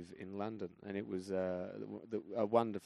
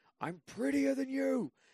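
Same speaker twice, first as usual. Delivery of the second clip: put-on shrill, very high-pitched shriek; 5 dB louder than usual. Recounting a fight with a woman who insulted the speaker, retelling a scream. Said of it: "And then I screamed".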